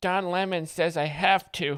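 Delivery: put-on small, high, tiny little-kid voice. Speaker doing a bit about kids watching TV, in a tiny child impression. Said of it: "This is my impression of a tiny child".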